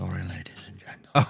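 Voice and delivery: soft, low, apologetic whisper. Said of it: "I'm speaking too loud, apparently".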